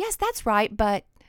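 classroom teacher tone of voice. Host showing listeners the tone she is going for, a teacher's tone. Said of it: "sound like a teacher who says".

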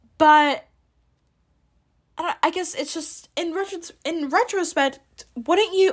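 tripping over words. Trying to explain a thought while losing track of words: stuttering. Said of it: "I am stuttering".

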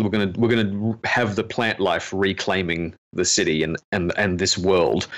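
ordinary talk

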